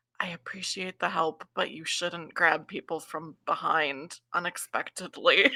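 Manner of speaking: soft, quiet, hushed stage whisper. Voicing a character telling off invisible hands that grabbed her: half-whispering. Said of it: "And just whispers".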